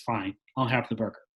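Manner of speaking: put-on defeated tone. Retelling a little girl giving in after her dad refuses pizza, mock-defeated. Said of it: "feeling defeated".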